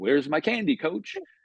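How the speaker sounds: breezy, cocky, swaggering voice full of attitude. Retelling a player's words while rounding third: imitating Steph LaRosa's swag attitude. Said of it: "She had that kind of swag attitude".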